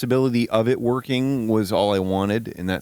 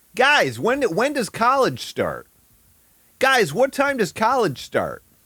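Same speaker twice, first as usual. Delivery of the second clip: put-on non-Michigan accent; 13 semitones higher than usual. Joking about accents: put-on non-Michigan accent. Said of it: "That's my best non-Michigan accent".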